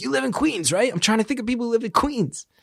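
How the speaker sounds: frantic, panicky delivery. Retelling how his agent phoned him in a panic, imitating the panicked agent. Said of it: "And he was like in a panic".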